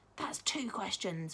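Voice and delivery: in a whisper. A girl answers a boy among friends, in a whisper. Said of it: "whispered Josie, shaking her head".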